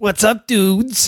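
odd put-on character voice, fake New York accent. A special guest greets the hosts in his put-on New York rug-boy voice. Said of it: "Something wrong with your voice?".

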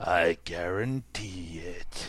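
voice dropped right down, very low. Retelling the scientist's reply to a woman: imitating Doctor Frank's voice. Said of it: "That's how he talks".

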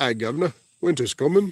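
put-on British accent. Asked by the host to say winter is coming, British Jon Snow accent. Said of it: "give me your best British Jon Snow accent".

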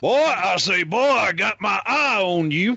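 high, slow cartoon voice. Joining in on a cartoon rooster as a spy chief: Foghorn Leghorn voice. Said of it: "could you imagine Foghorn Leghorn as Nick Fury?".

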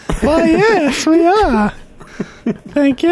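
very high, slow, drawn-out feminine Southern drawl. Voicing a female dwarf character in the game, a feminine southern drawl. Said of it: "I try to sound feminine to offset it".

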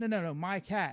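ordinary talk, nothing marked

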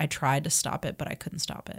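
mock sobbing voice. Retelling a scene where a character breaks down: imitating someone sobbing. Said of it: "he breaks down and is sobbing and says".

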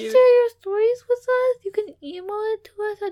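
put-on high, loud, pleading little-kid voice. A podcast host appeals to listeners in a begging little-kid voice. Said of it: "there's a little kid begging for you".

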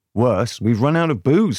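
ordinary delivery

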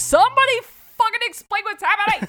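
play-acted very high, frantic freaking out. Retelling a man's reaction after the kid runs off, retelling someone freaking out. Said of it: "as he's freaking out".

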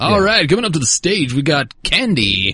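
strip club emcee announcer voice. Announcing the next performer coming up to the stage: strip club announcer voice. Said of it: "That's a strip club voice".

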